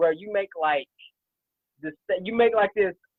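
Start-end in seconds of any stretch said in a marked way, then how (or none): none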